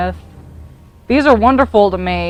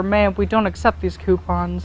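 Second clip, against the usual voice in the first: normal talking voice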